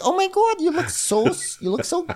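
put-on chipper Midwestern accent, New York tinge. Imitating Nicole with a cute little Midwestern accent, shades of New York. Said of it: "a cute little Midwestern accent".

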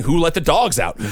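ordinary talk

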